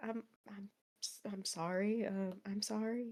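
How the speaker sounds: very quiet, hushed, gentle, tender yet panicked voice. A player's kneeling character apologizes as if reassuring a child after a nightmare, gentle panicked apology. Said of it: "he's saying it very gently".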